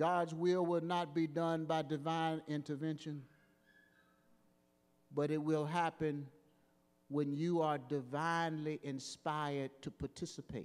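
very slow, word by word, low and hushed. Speaking to an audience about God's will, the speaker says it very slow. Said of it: "I better say it slow so you get it".

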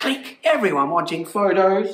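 plain

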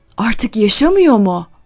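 shouted. Old men around a coffeehouse table react to a photograph, shouted. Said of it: "bağırdılar".

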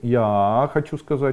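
slow, with я stretched long each time. Showing a speech habit to avoid: drawn-out я. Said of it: "Если вы тянете слово я длинным, так".

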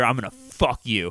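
forceful, aggressive, pushy half-whisper. Retelling what someone half-whispered into a woman's ear: imitating an aggressive half-whisper. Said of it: "really aggressively".

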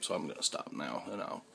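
low, soft, tearful choked-up voice. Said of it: "I'm getting a little choked up".

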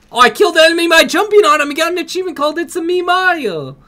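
very high, fast, excited, hyped gamer squeal.

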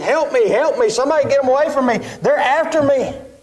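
put-on hollering, pitched very high. Retelling the young man running up for help, imitating someone hollering. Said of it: "he's hollering".

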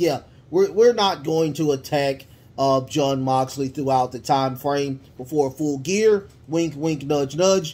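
ordinary delivery

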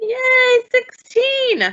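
high loud cheer.

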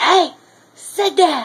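loud, high-pitched yelling. Telling a story about a dog nipping their leg, retelling a yell at it. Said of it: "And then I yelled at it".

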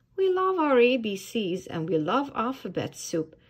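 ordinary delivery, nothing marked

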